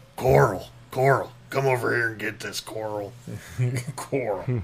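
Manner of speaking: put-on macho American accent. Discussing actors faking American accents, doing a Rick from Walking Dead impression. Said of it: "They got to go real macho with it".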